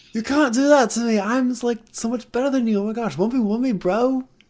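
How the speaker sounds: snooty put-on posh English kid voice, pitched very high. Making fun of British kids: put-on posh British kid accent. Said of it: "it makes them sound, like, so posh and, like, so, like, stuck up".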